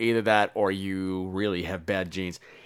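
low, soft snide remark.

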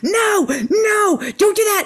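mock very high, shrill, negative-toned yell. Retelling an airport scene, the speaker imitates a woman screaming at her toddler. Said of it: "this woman is screaming at her 2-year-old".

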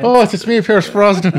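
high, loud put-on Irish accent, belted out. After someone points out that he's Irish, do a Pierce Brosnan Irish accent. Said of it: "can you use that accent".

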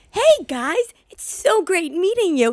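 put-on very high, cheerful children's-show voice. Describing how a man used to greet them, imitating his kids'-show-intro voice. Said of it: "talked like an intro to like a Disney show".

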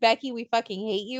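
ordinary talk

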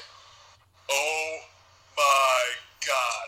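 mock terror slowly dawning, spoken very slowly. Retelling a SmackDown scene where a man backs against a wall, imitating his fear. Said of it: "His shit turns from like anger to fear".

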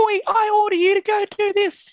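tiny, very high little voice. Speaker imitates the big grumpy guy with the mustache giving orders, little voice. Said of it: "he's got a little voice like this".

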